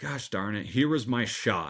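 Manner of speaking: disappointed, bummed-out tone. Retelling own thoughts after missing a chance, imitating own past disappointment.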